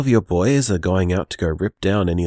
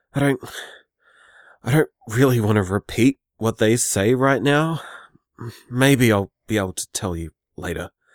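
anxious, slightly panicked; 4 semitones higher than usual. Leaving a phone message for someone asleep at home, freaking out a little. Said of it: "I'm freaking out a little right now".

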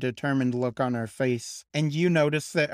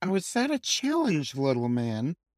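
exaggerated, playful fake offence with swooping pitch. Speaker retelling a woman's reply to a challenge: mock-offended. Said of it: "playing along as if she were offended".

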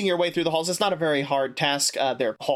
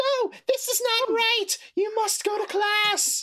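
very high, shrieking, drawn-out scream. The narrator voices her after she punches the locker, screaming. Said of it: "and then she screams".

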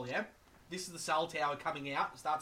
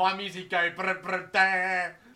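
loud, slow, dopey, dim-witted voice; 3 semitones higher, 9 dB louder than usual. Acting out a meme about a dim-witted metal fan: imitating a dim-witted guy.

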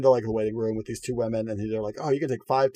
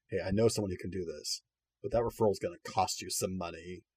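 mock-serious, dire tone, much lower and quieter; 4 semitones lower, 7 dB quieter than usual. Retelling what a surgeon said to them, imitating him turning very serious and dire. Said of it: "he gets very serious and very dire".

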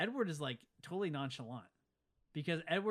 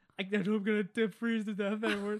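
mock, loud, high shiver, words broken by chattering teeth; 5 semitones higher, 7 dB louder than usual. Retelling a movie scene where Bella freezes in a snowstorm: imitating Bella with chattering teeth. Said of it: "shattering her teeth".

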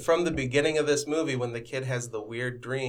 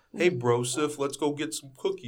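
put-on dude-bro way of talking; 2 semitones higher than usual. Joking about the cookie's name, talking like a bro: imitating a bro. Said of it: "Not like a bro. Like".

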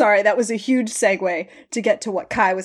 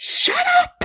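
mock shrill, very high-pitched shout. Retelling a scene where she yells at stabbed, grunting Jake as he is dragged away, imitating someone yelling. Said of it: "she just starts yelling shut up at him".

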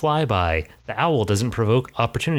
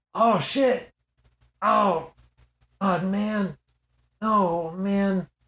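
very high, held-in, hushed, muttered cursing; 9 semitones higher than usual. Describing a distant person, quiet cursing to oneself. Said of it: "person like cursing to themselves who doesn't want to be loud".

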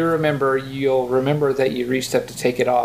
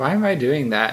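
ordinary talk

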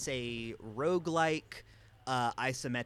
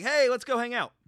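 put-on drunk voice at a much higher pitch; 12 semitones higher, 10 dB louder than usual. Describing a game's characters, imitating Dionysus as a drunk uncle. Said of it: "your drunk uncle".

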